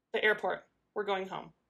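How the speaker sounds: ordinary delivery, nothing marked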